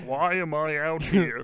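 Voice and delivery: put-on whiny comedian voice. Picturing a comedian in a spacesuit, Ray Romano voice. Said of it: "I pictured Ray Romano in a spacesuit, just being like".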